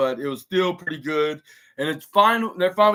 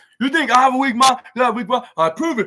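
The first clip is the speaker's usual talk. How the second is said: acted, in-your-face taunting yell, high and loud; 7 semitones higher, 5 dB louder than usual. Speaker retells Brooks Jensen yelling in Cedric Alexander's face, imitating Brooks Jensen yelling. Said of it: "started yelling at Cedric Alexander's face".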